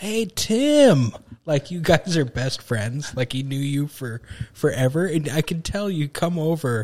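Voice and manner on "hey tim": very high, loud yell, one word stretched long. Retelling a campaign stop where dad spots the congressman: imitating dad yelling. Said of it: "starts yelling".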